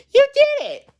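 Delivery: high loud excited squeal. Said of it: "like a sudden change of tone in his voice".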